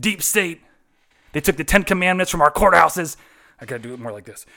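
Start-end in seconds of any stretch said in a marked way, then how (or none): 0.0-3.2 put-on ranting radio host voice, higher and louder. Doing an impression introduced as a conservative speaker: Alex Jones impression. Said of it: "He says that a lot".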